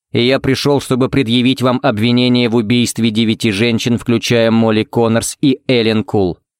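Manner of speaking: ordinary delivery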